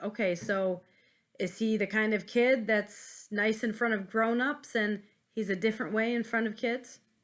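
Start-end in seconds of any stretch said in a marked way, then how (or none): none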